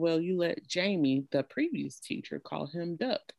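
ordinary delivery

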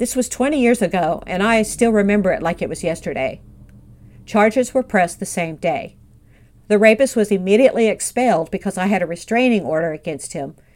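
normal talking voice

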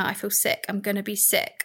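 usual speaking voice

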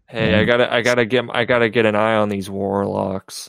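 mock flat voice without emotion. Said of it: "playing this role with absolutely no emotion".

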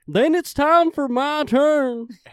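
hype wrestling-announcer voice. Speaker taking their turn against another player, WWE announcer voice. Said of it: "You're like a WWE announcer".

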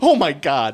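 mock stunned gasp of disbelief, loud and shocked. Retelling a reaction to a gun joke: imitating a friend's shocked reaction. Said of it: "I don't appreciate your rendition of me".

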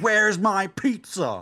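mock screamed, high-pitched yelling. Retelling jumping on the counter, imitating own scream. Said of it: "I jumped on the counter and I screamed".

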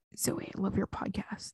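breathy, very soft, barely voiced whisper. Retelling what someone whispered in the speaker's ear, retelling a whisper. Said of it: "he whispered in my ear".

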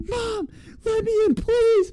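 mock very high, drawn-out sobbing, begging tone. Recalling being locked out of the van by mom, retelling screaming and crying. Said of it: "I'm sitting there screaming and crying".

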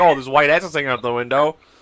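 plain

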